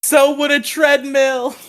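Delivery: play-acted yell, very high, loud and drawn-out. Retelling how a drug dealer yelled a joke at them while walking away: imitating someone yelling. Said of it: "And then he yelled".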